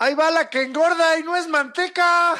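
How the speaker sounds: mock shouting, high-pitched.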